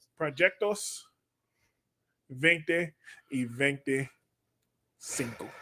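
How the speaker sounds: low, hushed, muttered movie-gangster voice. Mid-conversation, slipping into Spanish phrases; Scarface voice. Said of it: "why are you talking to me in Scarface?".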